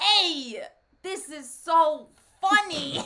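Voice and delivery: very loud, slow, high, booming celebrity voice. You are trying to do someone famous while talking about something funny: Christopher Walken impression. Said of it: "I'm trying to do Christopher Walken".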